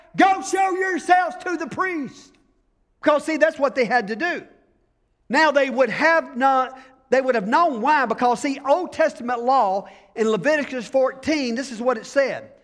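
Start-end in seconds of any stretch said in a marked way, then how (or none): 0.2-2.3 high, put-on shout as if across a distance. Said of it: "he just shouts back".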